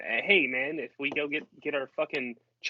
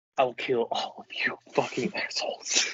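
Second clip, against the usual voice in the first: put-on muttering under the breath; 2 semitones lower than usual. Retelling a threat made while everyone was cheering: line said under the breath. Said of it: "almost under my breath".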